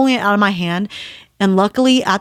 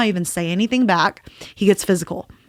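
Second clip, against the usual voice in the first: ordinary talk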